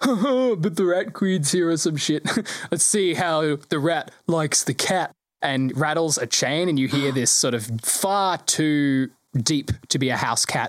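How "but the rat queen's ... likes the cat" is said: snooty, superior, haughty tone, drawn out. A game narrator voices someone unseen inside a house, haughty voice. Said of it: "a particularly haughty voice go".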